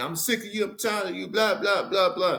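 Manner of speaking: shouting, pitched high. Speaker demonstrating how someone yells at another person, yelling. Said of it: "I'm yelling".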